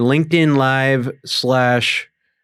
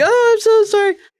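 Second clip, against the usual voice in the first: very high, tearful sobbing voice; 3 dB louder than usual. Imitating YouTubers who apologize after saying something offensive; mock crying. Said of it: "and they're like crying".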